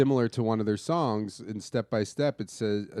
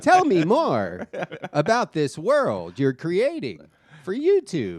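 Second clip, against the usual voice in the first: mock girlish voice; 7 semitones higher, 7 dB louder than usual. Acting out the person they were pitching to, in a TikTok girl voice. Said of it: "that TikTok voice".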